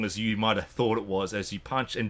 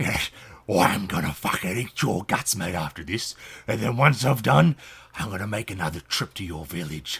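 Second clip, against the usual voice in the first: close, hushed whisper; 3 dB louder than usual. A game master voices a character whispering into a player's ear, whispering. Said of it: "whisper in your ear".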